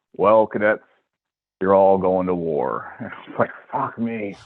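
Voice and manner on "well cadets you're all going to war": rough, gravelly voice at a slower pace. Retelling how he addressed the cadets at West Point after the alert: gravelly voice. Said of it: "gravelly voice".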